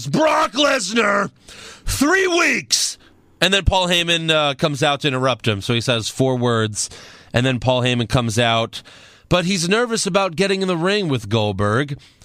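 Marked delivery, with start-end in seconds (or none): 0.1-3.0 high, shouted callout. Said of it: "and he yells".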